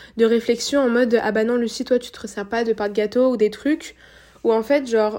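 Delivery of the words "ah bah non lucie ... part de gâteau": usual speaking voice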